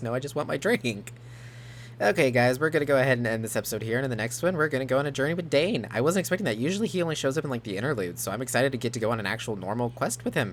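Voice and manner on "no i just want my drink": play-acted dry, unbothered deadpan. Repeating a game character's funny reply: imitating a deadpan reply. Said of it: "With a deadpan look on his face".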